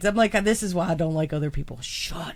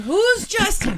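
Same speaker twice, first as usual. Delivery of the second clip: mock piercing, very high-pitched shrill scream; 12 semitones higher than usual. Speaker recounts reacting to a woman cheering the wrong name, retelling a scream. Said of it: "I'm screaming".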